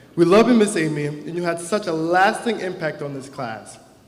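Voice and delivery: ordinary talk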